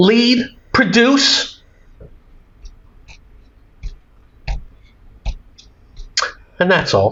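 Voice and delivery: exasperated, fed up. Wrapping up a hope that everyone does better, frustrated tone. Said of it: "why do I sound frustrated?".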